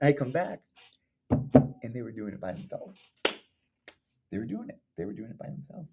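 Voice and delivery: voice catching, choking up, close to tears. Remembering kids building on their own, choking up, close to tears. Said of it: "and I'm gonna start crying".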